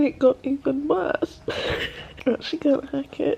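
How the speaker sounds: high, tearful voice, talking while crying. Reaching the next chapter of a devastating book, speaker is crying. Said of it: "I'm crying again".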